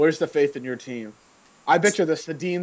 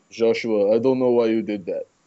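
put-on old man voice, louder; 3 semitones lower, 4 dB louder than usual. Doing an impression for the others to guess: imitating Mumpa. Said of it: "it's my grandpa".

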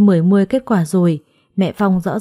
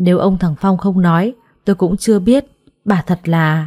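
plain

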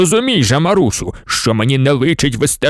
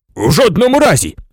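sudden, high-pitched exclaimed outcry; 6 semitones higher than usual. The professor refuses Maria Mykolayivna's demand: cried out. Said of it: "скрикнув професор".

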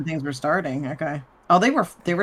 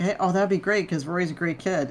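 ordinary talk

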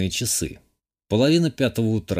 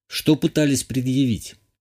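ordinary delivery, nothing marked

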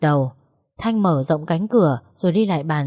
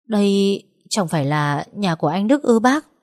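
ordinary delivery, nothing marked

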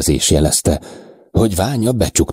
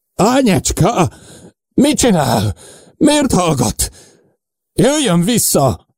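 very high, despairing, desperate shouting; 14 semitones higher than usual. A man calls to a girl who will not answer him, shouting desperately. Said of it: "Újra kétségbe esetten kiabált".

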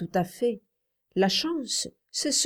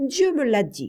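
proud, high-pitched crying out; 6 semitones higher, 4 dB louder than usual. The child answers a woman who laughed at him: proud exclamation. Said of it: "très fièrement, il s'écria".

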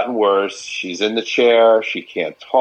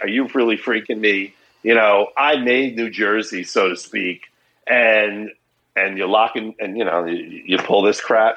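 plain

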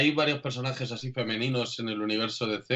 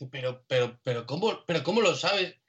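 mock badly upset, taken aback, slow and dismayed; 4 semitones higher than usual. Retelling a character's reply in a DC scene, acting out a very upset reply. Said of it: "muy contrariada".

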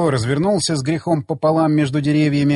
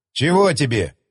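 plain

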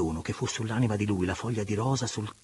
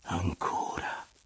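murmured words; 3 semitones lower than usual. The lover, under the woman's caress and voice, answers her murmuring. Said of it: "mormorò l'amante".

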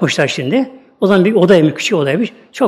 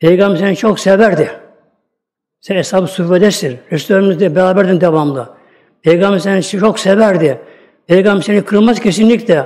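usual speaking voice

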